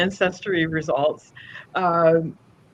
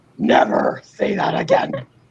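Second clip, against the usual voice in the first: ominous, evil, stern parent voice. Retelling how mom scolded a toddler: imitating a parental evil voice. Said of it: "embraces that, like, parental evil voice".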